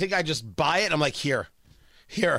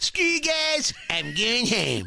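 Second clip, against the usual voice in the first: bratty cartoon kid voice, pitched up high; 5 semitones higher than usual. Show the others how your impersonation is today, in an Eric Cartman voice. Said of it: "my Cartman is like on point".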